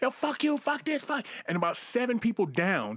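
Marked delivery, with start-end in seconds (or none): 0.0-1.3 play-acted, very high shouting yell. Retelling a man yelling down a line of cops: imitating a man yelling. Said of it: "he's yelling".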